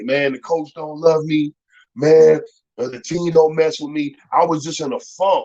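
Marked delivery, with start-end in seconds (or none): 0.0-4.2 put-on weepy, tearful, crying voice. Retelling calls to mama about the coach and team: retelling own past crying. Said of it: "I used to call my mama crying".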